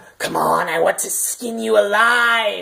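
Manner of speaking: creaky, rough, venom-laced menacing evil voice. Retelling what a voice from under the door said, imitating a venomous evil voice. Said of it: "just venomous voice".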